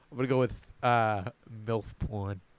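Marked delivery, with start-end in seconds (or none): 1.7-2.4 hushed voice, lower, very quiet. Naming a second pick in a group game: said very quietly. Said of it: "Saying it so quiet".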